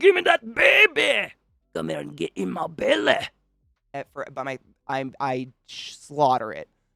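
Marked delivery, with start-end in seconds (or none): 0.0-3.2 bad Scottish accent, loud and high-pitched. Speaker admits slaughtering it while doing a bad Fat Bastard Scottish accent. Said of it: "I can't do a Scottish accent".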